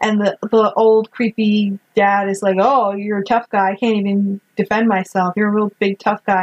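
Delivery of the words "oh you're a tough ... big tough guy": ordinary talk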